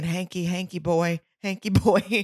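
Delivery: calm, meditative, lulling voice. Showing what you find the cutest thing, do it imitating Clint's Hank voice. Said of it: "his Hank voice".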